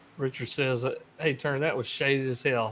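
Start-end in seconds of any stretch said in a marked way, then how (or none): none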